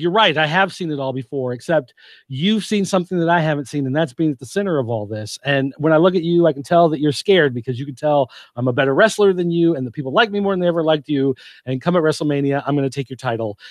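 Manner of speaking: ordinary delivery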